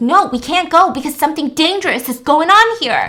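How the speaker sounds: acted-out, insistent, shouted yelling. Retelling a scene, quoting a character who is yelling: imitating someone yelling. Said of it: "And he's just yelling".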